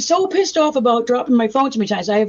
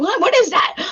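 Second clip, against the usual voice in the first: voice pitched up with a questioning tone; 7 semitones higher than usual. Retelling being heard on a live stream at night: imitating husband. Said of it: "my husband's like".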